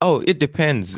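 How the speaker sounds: slow, stretched-out voice.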